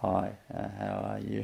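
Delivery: almost inaudible, very quiet and low voice. Showing the kind of speaking that is not meant: very low volume speech. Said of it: "that type of low volume stuff".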